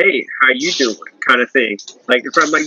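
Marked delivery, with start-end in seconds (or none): 0.0-1.0 flirty, casual, offhand tone. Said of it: "And that's how he talks".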